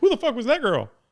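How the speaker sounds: very high-pitched put-on character voice. Guessing what someone asked after a podcast: LeBron James impression. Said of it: "That's my best LeBron James impression".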